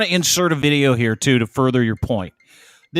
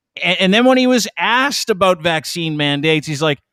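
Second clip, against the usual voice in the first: ordinary talk, nothing marked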